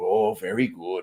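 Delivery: bad fake Japanese accent. Gamer showing how he talks while playing this game, stereotypical Japanese accent. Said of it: "I love taking the stereotypical Japanese accent".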